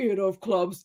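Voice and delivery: possessed, demon-like delivery. Speaker retells how a girl looking out the window spoke, demonic voice. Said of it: "her voice is going more and more demonic".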